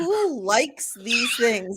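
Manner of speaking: slow words spoken through hard laughter. Apologizing to everybody for picking the question: laughing while talking. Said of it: "I'm laughing so hard".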